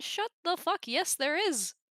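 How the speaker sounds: exasperated, high-pitched tone. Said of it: "and I'm just like".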